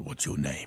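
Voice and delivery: hushed, breathy, friendly deep voice. Repeating the hero's question from the story: deep, friendly voice. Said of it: "it was just a deep, friendly voice".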